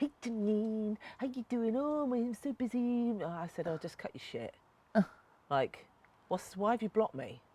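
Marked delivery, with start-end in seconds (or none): 0.0-3.1 high, fake American English accent. Imitating a man phoning her back, stupid put-on american accent. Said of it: "He's got this stupid American English accent".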